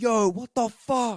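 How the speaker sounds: very high, very loud, stretched shout. Retelling how someone reacted when Andrew showed up: imitating someone's loudest shout. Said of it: "the loudest".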